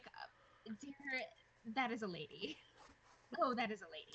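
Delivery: slow, hushed half-whisper. Answering another character's question in character, in Draconic: half-whispering. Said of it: "I Whispering, I answer you".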